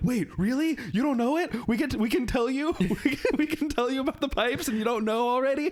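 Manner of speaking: put-on squeaky-high, thrilled, can't-believe-it voice. Retelling what the group told a lady who didn't know: imitating own excited past words. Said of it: "so excited of".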